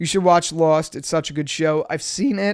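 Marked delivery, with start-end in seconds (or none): 1.9-2.5 voice breaking, cracking up high mid-phrase. Answering a suggestion to watch a show: voice cracking. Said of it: "My voice just cracked".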